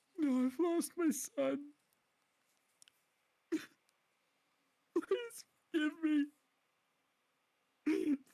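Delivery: very high, loud, tearful, sobbing pleading. Game master plays a kneeling character who starts crying, acted crying. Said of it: "I'm trying to make myself cry right now".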